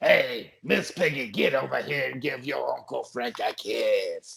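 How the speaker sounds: cartoon frog puppet voice, chain-smoker's rasp. Showing the group his cigarette-smoking frog character: Frank the Frog voice. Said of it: "That's Frank the Frog right there".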